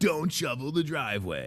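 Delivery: dramatic movie trailer announcer voice. Parent imitating their son, dramatic movie trailer announcer voice. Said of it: "sounds like a dramatic movie trailer announcer guy".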